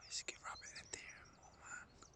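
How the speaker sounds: very soft whisper. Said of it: "That's why I'm whispering".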